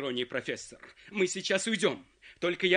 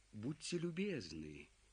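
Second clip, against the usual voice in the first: very low, very quiet, venomous snake-like murmur; 7 semitones lower, 16 dB quieter than usual. Narrator reading a character handing the phone to another man, venomous snake-like voice. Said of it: "змеиным голосом обратился Филипп Филиппович".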